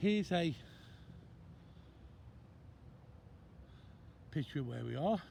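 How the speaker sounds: winded, out-of-breath voice. Speaker showing a picture of where they are after a long hike, out of breath. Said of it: "I know I sound out of breath".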